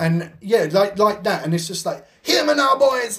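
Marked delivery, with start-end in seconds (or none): 2.2-3.2 put-on Jamaican accent, laid on, pitched up.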